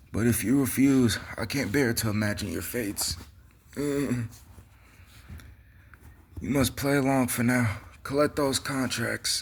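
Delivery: terrible, put-on, high-pitched old man voice. Reading Elder Kettle's lines to the boys aloud, in an old man voice. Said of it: "I bet my old man voice is just terrible".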